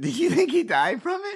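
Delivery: very high voice, holding back laughter leaking through. Asking another person a question, trying not to laugh. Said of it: "I'm trying to say this without laughing".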